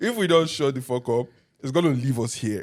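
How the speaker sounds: plain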